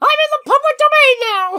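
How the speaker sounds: very high-pitched, loud cartoon squeak. After saying the high-pitched voice can't be matched, trying anyway: Mickey Mouse voice. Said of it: "You made it sound like Mickey Mouse".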